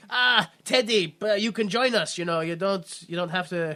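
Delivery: heavy put-on German accent, evil villain voice. Retelling what the villain Kane says to Teddy: German accent as Kane. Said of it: "I don't know why I'm giving him that accent".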